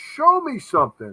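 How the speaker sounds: exasperated, screaming yell. Retelling watching a show that cuts away: imitating screaming at the tv. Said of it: "I'm screaming at the T V going".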